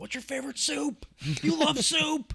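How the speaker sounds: mock screaming. Retelling yelling at other players over game proximity chat: imitating screaming. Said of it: "we'd just start screaming".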